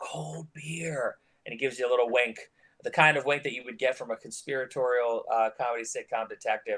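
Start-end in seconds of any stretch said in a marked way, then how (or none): 0.0-1.2 hushed, secretive under-the-breath whisper. A general store shopkeeper looks both ways, then whispers to the customer. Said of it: "He looks both ways and he whispers".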